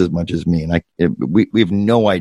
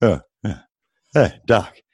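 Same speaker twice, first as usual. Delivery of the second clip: put-on trumpet-like voice. Showing how Warburton says hey Doc: imitating Warburton saying hey Doc. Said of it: "these little sounds of agreement".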